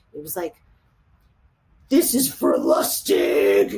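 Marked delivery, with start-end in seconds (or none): 1.9-3.8 very low, slow, swooping, scary menace. Recounting the moment a woman fired a gun at them: retelling a low, scary voice. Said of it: "she said in a really low, scary voice".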